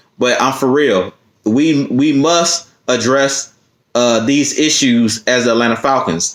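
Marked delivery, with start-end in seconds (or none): none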